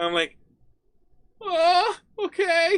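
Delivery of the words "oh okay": squeaky, very high, loud cartoon yelp. Retelling own past reply in a put-on voice: Morty voice. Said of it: "I totally Morty voice now".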